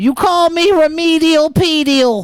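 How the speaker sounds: very high, cartoonish Massachusetts accent. Retelling what a friend from Massachusetts said: Petey impression, Massachusetts accent. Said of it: "He talked a lot like this".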